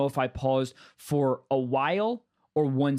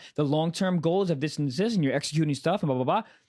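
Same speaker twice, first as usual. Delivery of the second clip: usual speaking voice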